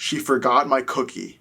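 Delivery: put-on utterly serious, grave, dead-serious tone. Retelling a man's answer when asked if he needed help, in a serious tone. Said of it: "in the most serious tone he says".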